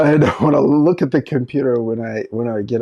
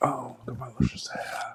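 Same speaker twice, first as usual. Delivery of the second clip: mock seductive voice, quieter; 14 dB quieter than usual. Joking about making hair videos, showing a put-on sexy voice. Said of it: "You can be sexy in them".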